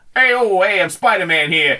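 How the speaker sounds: put-on streetwise, tough-guy New York accent. Riffing on a movie crossover with the others, in a tough-guy New Yorker voice. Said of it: "tough guy New Yorker voice".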